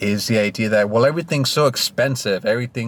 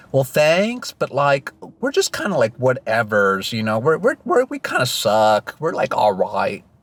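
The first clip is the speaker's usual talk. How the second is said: sing-song, put-on Californian accent; 3 semitones higher than usual. Imagining a reply to give them, in a put-on Californian accent. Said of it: "Let me do my best Californian voice".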